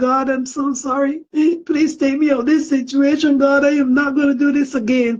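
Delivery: put-on crying-baby voice, tearful and sobbing. Retelling a woman's plea to God in a cell, imitating someone crying like a baby. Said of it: "she was over there crying like a baby".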